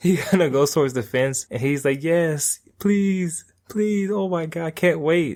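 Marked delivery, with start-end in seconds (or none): 2.0-5.4 high, drawn-out, gross, grovelling whine. Retelling an anime scene, imitating a character whining. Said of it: "whining and just kinda disgusting".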